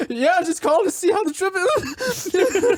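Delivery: very high, slow, fake-casual forced calm. Retelling a call to dad, imitating own forced calm. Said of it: "Not at all freaking out".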